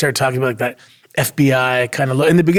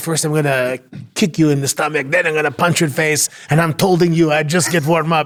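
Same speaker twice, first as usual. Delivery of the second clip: put-on French Canadian accent; 2 semitones higher than usual. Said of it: "And you took that from the prime minister".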